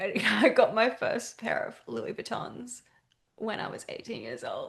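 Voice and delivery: mock sobbing, weepy delivery through tears. Retelling an interview clip from Vogue: imitating Bella Hadid sobbing. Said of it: "It's, like, sobbing".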